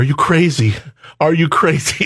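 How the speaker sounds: put-on crying, mock tearful voice. Retelling the reaction of the woman being proposed to, imitating her crying. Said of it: "she asked me while she's crying".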